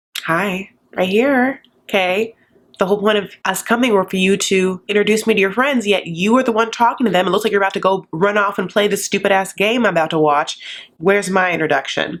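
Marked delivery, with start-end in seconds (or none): none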